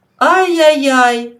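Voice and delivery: loud, drawn-out, reproving, chiding "ay-yay-yay". A narrator reads Father Luka reacting to sobbing from the stove, reproachfully. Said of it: "докірливо промовив він".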